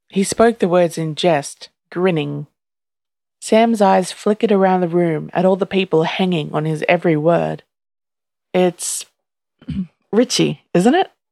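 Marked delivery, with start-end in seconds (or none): 8.6-11.1 markedly uncertain, throat cleared midway. Narrator reads a character guessing a name before onlookers, markedly uncertain, clearing throat. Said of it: "he asked in a markedly uncertain tone, clearing his throat mid-sentence".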